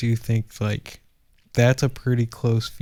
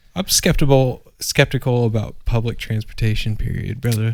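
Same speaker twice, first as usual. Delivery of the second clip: ordinary delivery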